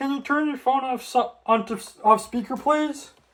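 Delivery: very high, put-on disguised voice. Retelling asking a delivery driver to take the phone off speaker: imitating own disguised voice. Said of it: "I say in a disguised voice".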